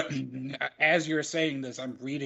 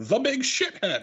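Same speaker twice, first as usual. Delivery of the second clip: smooth, polished radio announcer voice, pitched up; 8 semitones higher than usual. Retelling a commentator's call: Tony Schiavone polished radio announcer voice. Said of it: "Tony Schiavone in polished radio announcer voice going".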